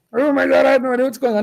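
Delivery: high-pitched, panicked, overwhelmed, rattled off quickly. Imitating a student stuck on the homework: imitating a panicked student. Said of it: "don't panic".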